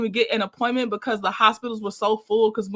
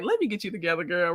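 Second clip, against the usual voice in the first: adorably cute little voice; 4 semitones lower, 5 dB quieter than usual. Reacting to a chat comment, imitating Mel's cute voice. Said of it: "Mel's cute voice is like".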